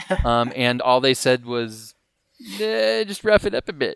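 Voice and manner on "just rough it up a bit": stock put-on British accent, pitched up. Quoting what they said about the goatee, put-on British accent. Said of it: "a British accent".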